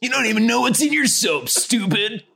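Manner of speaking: very high-pitched, eerie, cool, taunting put-on voice. Quoting a commercial they keep getting, in a Jigsaw voice. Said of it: "That's a cool voice".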